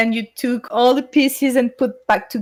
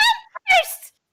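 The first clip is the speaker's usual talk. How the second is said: very high, out-of-control, high-pitched squealing scream. Retelling own past scream from an old video: imitating own past high-pitched scream. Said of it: "my voice became so high pitchy".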